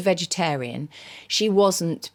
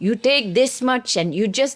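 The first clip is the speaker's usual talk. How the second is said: fake Indian accent, played outrageously; 4 semitones higher than usual. Recalling asking a man to teach indian cooking, quoting him in an indian accent. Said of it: "I'm going to be outrageous and do an accent now".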